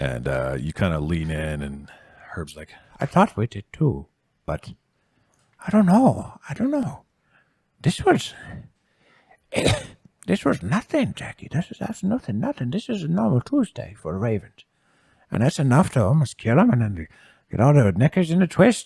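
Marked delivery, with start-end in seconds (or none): 3.0-18.9 hushed whispering voice, higher pitch. Voicing a character speaking quietly to jackie: whispering. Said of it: "And then they start kinda whispering".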